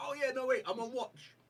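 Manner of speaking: high, loud, sudden startled blurt. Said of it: "you're like".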